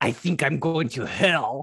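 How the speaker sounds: wild, exaggerated, put-on French accent. Retelling the little brother's line, in a crazy French accent. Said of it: "he does that crazy French accent".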